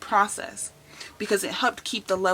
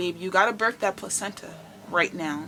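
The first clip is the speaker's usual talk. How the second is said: mock-stern put-on voice, quieter; 3 dB quieter than usual. Retelling what her mom said to her after the birth: imitating stern mom. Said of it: "she gets very stern with me".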